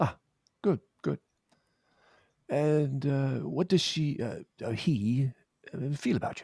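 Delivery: put-on British accent. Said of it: "people who are doing a British accent".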